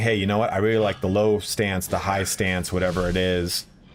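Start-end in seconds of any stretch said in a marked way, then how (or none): none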